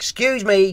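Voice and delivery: mock really loud, high call-out. Retelling asking a man blocking the pavement to move: retelling own loud call. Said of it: "really loud".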